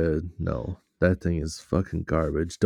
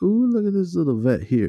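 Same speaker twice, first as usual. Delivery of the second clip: very high, gushing, excited delight with swooping pitch; 12 semitones higher, 5 dB louder than usual. Retelling what a cashier said about a car pulling in: imitating an excited remark. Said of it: "she said it like she was excited".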